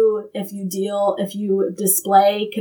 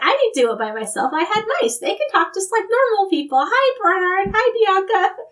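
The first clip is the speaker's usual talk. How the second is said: put-on very high, sing-song, chirpy little kid voice; 11 semitones higher than usual. Retelling a girl's TV news interview about talking mice: little kid voice as Penny. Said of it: "just the way that a little kid would".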